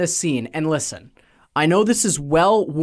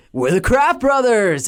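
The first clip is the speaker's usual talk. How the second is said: put-on California-flavoured kids' show host voice, pitched up high; 6 semitones higher than usual. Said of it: "a very specific California vibe".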